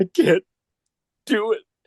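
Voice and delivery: tearful, very high sobbing and weeping. Bill, in tears, points a revolver toward a man; crying while speaking. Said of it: "He's crying, and he goes".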